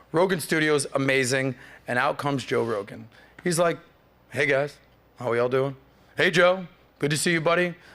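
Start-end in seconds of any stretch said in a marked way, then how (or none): 4.3-7.7 put-on calm, flat voice. Retelling a studio visit, imitating the host's greeting: stoic, calm tone. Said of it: "not excited, but not, like, down".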